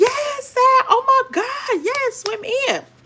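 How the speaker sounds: very high, excited screaming cheer. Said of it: "They were screaming like".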